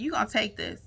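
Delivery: acted cocky, rude voice, full of attitude. Retelling how a client handed over forty dollars, imitating an attitude. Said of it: "And with an attitude".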